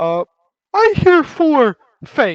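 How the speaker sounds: big, loud, slow, lumbering, burly ogre voice. Game master voicing an ogre asking the guards to let him in, burly ogre voice. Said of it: "this large, burly ogre".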